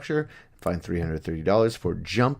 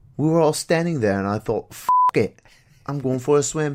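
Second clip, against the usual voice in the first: loud, high, fake put-on British accent; 7 semitones higher, 5 dB louder than usual. Reading a Welshman's quote from a news story: put-on British accent. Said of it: "I'm gonna try and do a British accent".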